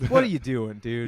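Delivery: normal talking voice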